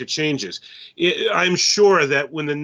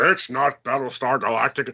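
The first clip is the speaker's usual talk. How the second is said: put-on elderly man's voice; 3 semitones lower than usual. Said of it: "my old man voice".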